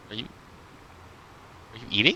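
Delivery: quick, hushed, startled near-whisper. A player retells what an elf barmaid asked, acting out a surprised barmaid. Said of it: "And she's like clearly surprised".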